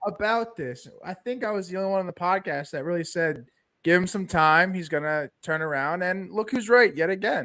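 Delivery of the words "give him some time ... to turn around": ordinary talk, nothing marked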